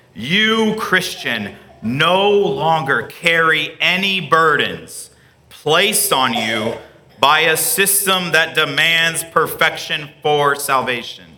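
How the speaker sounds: slow, deliberate, each word spaced out. Repeating a long statement to the listener, saying it slower. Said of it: "say it slower".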